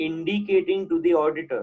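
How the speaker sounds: stress on indicating. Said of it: "underline the word".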